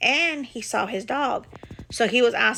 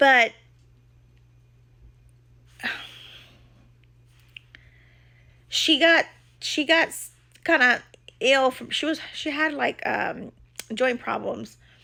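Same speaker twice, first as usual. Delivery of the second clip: voice fighting back tears; 3 semitones higher than usual. Telling how an old, ill dog had to be put down: fighting back tears. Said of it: "I'll try to say this without crying".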